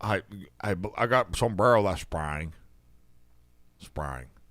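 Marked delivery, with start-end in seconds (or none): 1.0-4.3 put-on strong Southern accent, lower pitch. Retelling what a caller said on the phone: Will Billy impression. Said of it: "This is a really strong Southern accent".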